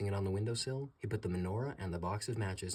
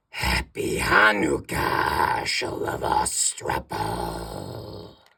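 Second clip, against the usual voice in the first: very deep, booming, loud, creaky goblin voice; 9 semitones lower, 13 dB louder than usual. Narrating a story, the king of the goblins greets Herschel in a voice like cracking bones. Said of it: "a voice that sounded like the cracking of bones".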